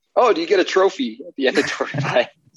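put-on playful teasing. Recounting what a friend asked in jest, retelling a joking question. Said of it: "like jokingly asked".

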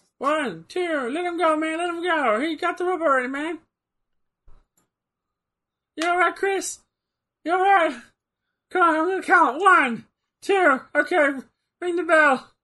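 very high-pitched, chattering voice. Watching a wrestling match, doing a referee impersonation like Skeeter from Doug. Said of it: "my fucking referee impersonation turned into Skeeter from Doug".

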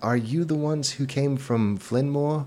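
trembling, wavering, shaky, high-pitched voice. Voicing an inn worker who came up to the travellers, ask in a shaky voice. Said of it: "he says in a shaky voice".

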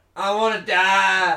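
put-on Southern US wail, very loud and high. Joking during a podcast chat: put-on southern us accent, screaming. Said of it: "screaming out he wants to die in a southern U S accent".

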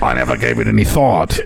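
rough, gravelly, cigarette-worn rasp. Quote a woman who sounds surprised to be asked, in her cigarette gravelly voice. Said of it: "in her cigarette gravelly voice".

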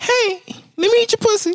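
very high-pitched, cartoonish squeaky voice. Arguing that delivery matters, demonstrating a high-pitched voice. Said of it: "If you have a high pitched voice".

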